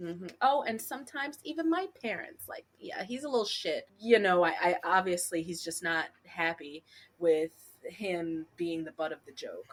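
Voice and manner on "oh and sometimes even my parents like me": put-on, high, teasing, taunting, mocking voice. Retelling a scene where a character mocks a girl: imitating JT's mocking voice. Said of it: "mocking voice of her".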